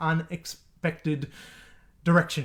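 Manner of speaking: oddly drawn-out, slow delivery.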